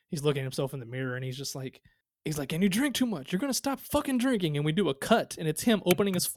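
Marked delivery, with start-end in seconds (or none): 2.5-4.5 very high-pitched, furious, raging tantrum. Acting out a man's scene of looking at himself in the mirror, imitating a tantrum. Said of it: "during his his tantrum".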